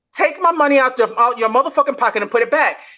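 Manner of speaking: plain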